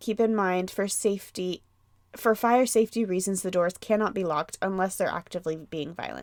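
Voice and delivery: ordinary talk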